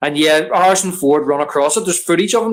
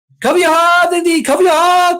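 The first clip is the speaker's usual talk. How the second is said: put-on shout, higher and louder; 5 dB louder than usual. Retelling a film scene, quoting a character's warning: imitating Short Round shouting. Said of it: "Short Round sh-, shouting".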